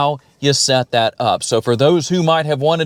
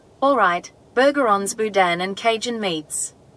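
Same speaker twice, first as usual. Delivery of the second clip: Australian-accented voice; 6 semitones higher, 4 dB quieter than usual. Demonstrating the voice assistant's Australian setting: Australian-accented assistant voice. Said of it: "if we go to Australia, here's how that's going to sound".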